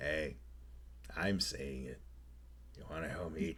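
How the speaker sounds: tiny, soft, low little creature voice. A little upright lizard at your feet speaks up, in a small voice. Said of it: "there is a small voice at your feet".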